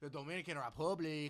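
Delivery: bad, put-on Dominican accent. Talking about the teams in the WBC, bad Dominican accent. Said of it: "That was a bad accent".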